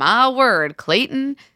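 put-on full old-West Southern accent, pitched high. Quoting a line said to Clayton, Jesse Palmer Southern accent. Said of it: "Jesse Palmer suddenly has a Southern accent. / what it sounded like an old Western".

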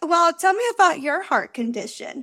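sarcastic, snarky tone. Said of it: "when I'm feeling snarky".

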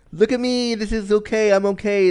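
acted proud, boastful bravado. Retelling what they used to tell prospective lovers: imitating own proud boast. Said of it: "I would say this with such pride and such gravitas".

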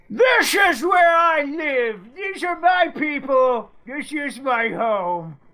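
slow, high declaring tone. Voicing the colonist after a question on how he would sound: imitating Roger Williams. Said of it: "Is that what he would sound like?".

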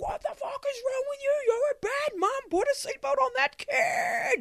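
very high, shrill, all-out screaming tirade. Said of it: "just screaming".

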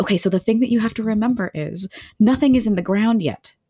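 ordinary delivery

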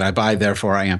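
ordinary talk, nothing marked

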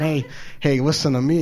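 normal talking voice

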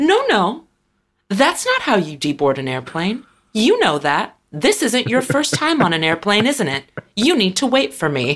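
put-on cheery voice, swooping, with a menacing edge. Retelling what a woman on the plane said, in a mock-cheerful voice. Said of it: "in a cheerful voice".

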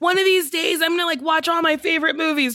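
high, excited, shouted, resolute tone.

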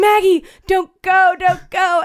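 long, high, drawn-out scream. Retelling a man chasing her down the street, imitating someone screaming. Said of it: "And he like screaming".

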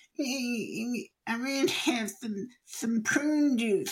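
put-on very high, slow, goofy little-kid voice. Retelling a child's first silly voice: imitating a child's silly voice. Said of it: "he scrunches up his little face and he goes".

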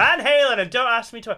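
aggressive, very loud, high shout. Retelling what you always answer about your favourite band: imitating own shout. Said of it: "I just shout".

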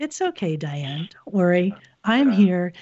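very calm, soothing computer voice. Describing the little inner voice that comforts the speaker, calm HAL-like voice. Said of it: "it sounds very calm, almost like Hal in 2001".

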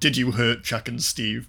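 ordinary talk, nothing marked

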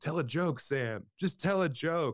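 very high, stretched-out, drawn-out shouting. Retelling how Joe yelled from the back of the room: imitating someone yelling. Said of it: "just yelling".

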